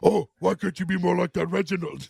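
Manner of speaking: deep, bassy, rough, grumbling dad voice. Retelling how a performer talks as his dad, in an Andre the Giant voice. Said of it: "the father's a really deep, bassy voice".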